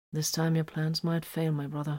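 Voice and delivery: ordinary talk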